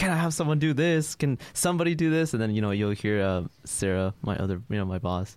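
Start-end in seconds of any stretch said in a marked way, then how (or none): 0.0-2.3 high-pitched, forceful yelling. Retelling how the boss yells orders near a deadline: imitating someone yelling. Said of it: "he'll be yelling".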